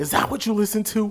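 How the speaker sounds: very high-pitched, scolding yell. Retelling how his mom came out yelling: imitating Miss Bland yelling. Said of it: "She's yelling at me".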